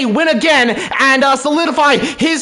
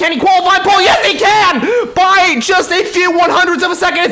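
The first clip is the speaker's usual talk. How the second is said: thrilled, excited commentator outburst; 4 semitones higher than usual. Commentating a qualifying session for viewers, shouting excitedly. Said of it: "Sorry for shouting in the mic".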